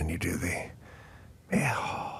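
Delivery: barely audible, very soft whisper, all breath. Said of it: "It's a whisper".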